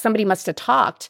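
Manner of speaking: ordinary talk, nothing marked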